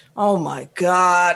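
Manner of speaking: put-on upset, exclaiming voice. Retelling what a moviegoer behind them said: imitating an upset moviegoer. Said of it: "he was upset".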